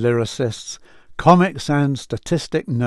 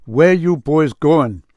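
put-on Jamaican-accented speech; 4 dB louder than usual. Retelling a man in a van asking the boys where they were going, jamaican accent. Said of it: "a Jamaican accent asked".

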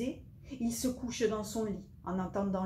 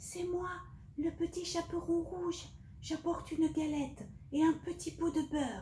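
shrunken, small, very high-pitched voice; 9 semitones higher than usual. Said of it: "en faisant une petite voix".

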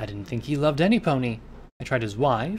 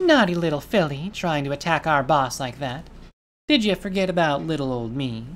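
jeering, teasing, mocking taunting voice; 3 semitones higher, 4 dB louder than usual. An attacker taunts the narrator after wounding the narrator's leg, in a mocking voice. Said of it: "She said in her mocking voice".

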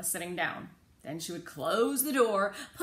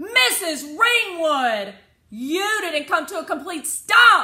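high-pitched, very loud yell; 8 semitones higher, 11 dB louder than usual. A passenger calls to the bus driver after a rolled stop, shouted. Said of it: "I shouted".

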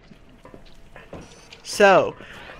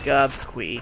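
low robot voice. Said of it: "Say it in your robot voice".

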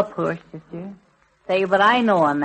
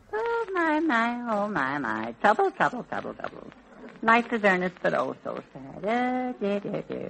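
soft, dejected, woe-is-me sad lament; 3 semitones higher, 7 dB quieter than usual. Lamenting to a partner who asks what's the matter: sounding sad. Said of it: "You sound as if you lost your best friend".

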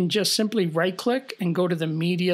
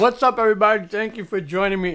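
speaking with mouth full while eating; 3 semitones higher, 5 dB louder than usual. A video host greets viewers, talking while eating. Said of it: "Sorry, I'm eating".

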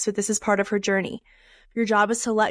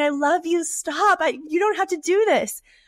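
mock screaming at top of lungs, loud, desperate; 8 semitones higher than usual. Retelling shouting at someone loved making a bad decision: imitating own shouting. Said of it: "I'm screaming, I'm shouting".

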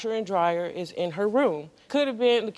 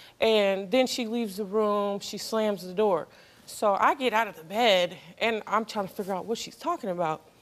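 ordinary talk, nothing marked

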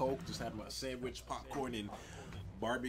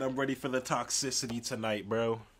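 plain

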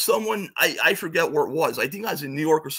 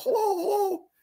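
put-on very high, girlish, disguised little-girl voice. Retelling how the guy answered the phone to disguise his voice, little-girl phone voice. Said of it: "answers the phone like a little girl".

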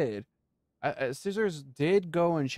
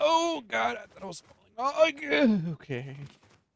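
high, scared, panicky voice; 8 semitones higher than usual. Playing a game, the speaker thinks they are falling: panicking. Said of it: "why am I panicking?".

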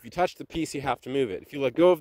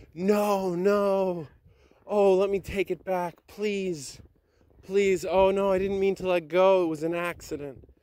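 mock over-sad, high, desperate pleading cry; 7 semitones higher than usual. Retelling what you screamed after letting go of the piece: retelling a sad scream. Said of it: "I just screamed".

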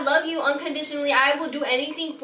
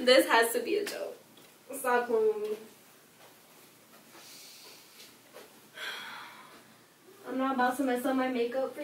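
crying while talking, much quieter; 2 semitones lower, 8 dB quieter than usual. Reacting to someone's tattoo news, crying while talking. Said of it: "Can you stop crying?".

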